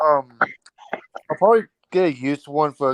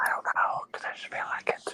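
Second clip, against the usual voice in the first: soft, voiceless whisper. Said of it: "why are you whispering it?".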